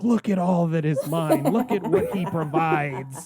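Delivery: half-shouted, mildly screaming ranting cry. Retelling a film scene, imitating Jeremiah screaming. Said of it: "he's screaming".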